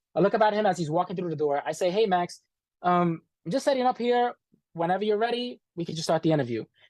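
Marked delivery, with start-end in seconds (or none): 1.9-6.7 play-acted courteous, mild-mannered, accommodating tone. Retelling greeting an angry man walking in, acting out speaking politely. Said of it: "He is pissed off".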